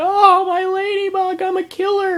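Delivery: put-on, very high, slow, drawn-out hysterical sobbing wail. Retelling a kid who killed his ladybug: imitating a child crying hysterically. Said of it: "he was just crying hysterical".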